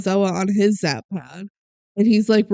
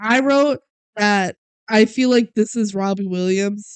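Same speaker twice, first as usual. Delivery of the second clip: ordinary talk, nothing marked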